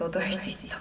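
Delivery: soft, unvoiced whisper.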